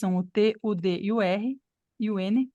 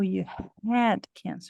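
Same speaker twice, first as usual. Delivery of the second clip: strong, heavy stress on "had". English pronunciation lesson replying to I have cancer, strong stress on had. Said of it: "Viram que o had ficou bem forte aqui".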